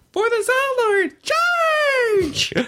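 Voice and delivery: very high, tiny fairy voice, crying out. Reading the Dresden books aloud to her, speaker does a dewdrop fairy voice. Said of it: "I do the full voice for all of the dewdrop fairies".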